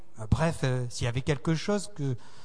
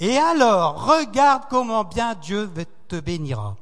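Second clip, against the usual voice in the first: high, raised voice, overflowing with absolute joy; 5 semitones higher, 7 dB louder than usual. Narrating what the pastor adds after a pause, retelling Pastor Dave's absolute joy. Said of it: "avec une joie absolue".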